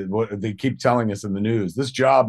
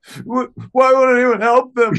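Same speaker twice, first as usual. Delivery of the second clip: mock freak-out, much higher pitch, louder; 13 semitones higher, 7 dB louder than usual. Retelling a woman's reaction to the Blair Witch Project movie, imitating Jennifer freaking out. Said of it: "Jennifer is freaking the fuck out".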